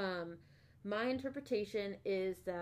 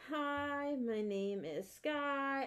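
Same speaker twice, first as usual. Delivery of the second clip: put-on very slow, high-pitched little girl voice; 5 semitones higher than usual. Retelling a show clip, quoting a little girl: imitating a little girl. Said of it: "little girl, she's like".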